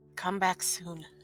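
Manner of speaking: hushed, whispering voice. Voicing a character watching someone slither off: whispering. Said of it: "while whispering".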